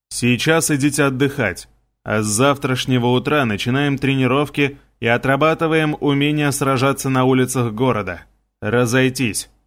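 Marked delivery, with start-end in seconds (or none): none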